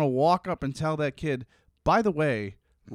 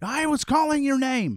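put-on scream, higher pitch; 9 semitones higher than usual. Retelling a mom shouting at her kid playing a video game: imitating someone screaming. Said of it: "starts screaming".

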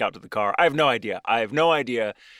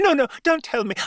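put-on prim child voice, higher pitch; 3 dB louder than usual. Retelling a scared little girl begging not to hear the story: imitating a scared child, Mary Poppins style. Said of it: "I'm making her sound like one of the children from Mary Poppins".

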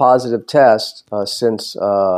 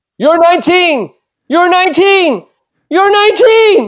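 put-on loud, very high-pitched older man impersonation; 5 dB louder than usual. Asked if they want to hear it, the speaker does an impression of a 60-year-old man. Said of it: "my impersonation of a 60-year-old man".

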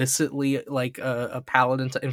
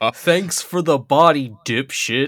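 evil voice, louder; 5 dB louder than usual. Recapping a scene where Chimeramon flies away, quoting the evil voice. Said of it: "the evil voice was like".

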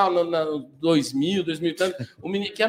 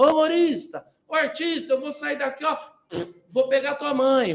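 put-on high, drunken man shouting loudly; 8 semitones higher than usual. Retelling how a drunk heckler at a stand-up gig shouted: imitating a drunk man yelling. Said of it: "começou a gritar".

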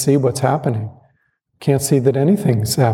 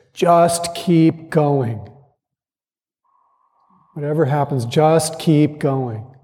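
mock large, full, big voice; 3 semitones higher than usual. Quoting a man who spoke the first night about Zen practice: big voice. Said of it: "with this big voice".

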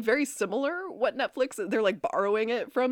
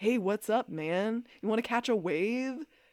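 put-on surfer stoner dude voice, quieter; 3 dB quieter than usual. Joking about a talking dog unlike Scooby-Doo, the speaker does a surfer stoner dude voice. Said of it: "he's like a surfer stoner dude".

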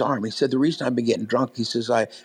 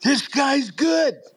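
put-on drunk man yelling, much higher. Retelling how a drunk man yelled in the middle of worship, imitating a drunk man yelling. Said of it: "he was just yelling in the middle".

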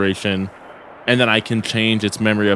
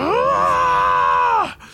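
shrill, very high, swooping, alarmed scream. Seeing blood on his hands in character: in-character scream. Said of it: "and I scream".

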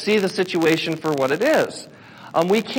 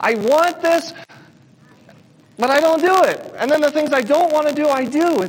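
exasperated, fed-up, frustrated lament, pitched up; 7 semitones higher than usual. Quoting a man's words to listeners, retelling frustrated words. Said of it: "Do you hear the frustration in his voice?".

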